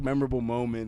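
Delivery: ordinary talk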